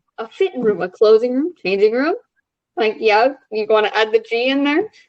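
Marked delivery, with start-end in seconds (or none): none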